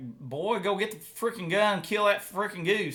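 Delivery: high, put-on, folksy hillbilly farmer voice. Giving shooting advice when asked for a hillbilly farmer's words: hillbilly farmer voice. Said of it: "give me, like, some good hillbilly mental game shooting advice".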